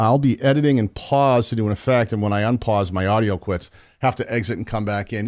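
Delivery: normal talking voice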